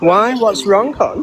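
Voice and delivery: high, patronizing, condescending tone. Answering another speaker's complaint about the voice: condescending tone. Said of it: "you sound very condescending".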